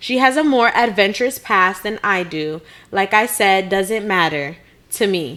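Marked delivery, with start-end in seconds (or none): 3.7-5.4 break between "matter" and "to me". Reading out someone's written message, following its punctuation: pause after matter. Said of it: "I'm saying it like that because he put the period after matter and then to me, period".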